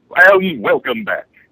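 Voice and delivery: very high, loud radio-announcer delivery. Welcoming listeners back after a short radio break: announcer voice. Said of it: "with his wonderful announcer voice".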